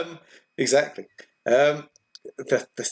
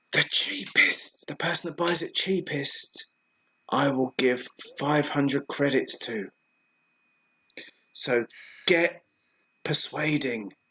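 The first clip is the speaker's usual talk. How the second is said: hushed, slow, deliberate half-whisper; 4 dB quieter than usual. Voicing a character who pushes someone away and half-whispers an offer: half-whispering. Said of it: "whispers at them".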